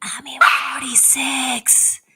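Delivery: put-on soft whisper. Retelling how someone at an event whispered in their ear: imitating Charlie's soft whisper. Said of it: "very softly whispered in my ears".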